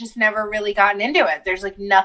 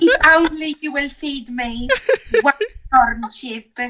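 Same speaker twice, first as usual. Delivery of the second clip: put-on French-ish accent drifting all over, pitched up; 5 semitones higher than usual. In a comedy begging bit among friends: wandering foreign accent. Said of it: "I love like all the places that accent went".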